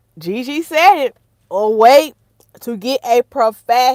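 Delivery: very loud, high-pitched, full-on shouting. Talking to viewers about hair care: yelling. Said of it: "Let me stop yelling in y'all ear".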